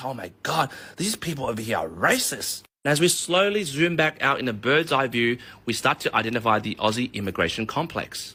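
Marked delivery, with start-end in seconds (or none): 0.0-2.6 slightly frightened, nervous, a bit scared voice. Acting out a scared new arrival running to another: acting a bit scared. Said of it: "gets a bit scared and runs to another migrant and goes".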